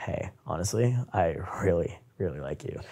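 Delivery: very quiet, very slow, raspy, seductive murmur. Showing how he purposely talks to her, raspy, quiet, low and seductive. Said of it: "I'll purposely make my voice raspy. ... Like very quiet and low and like seductive".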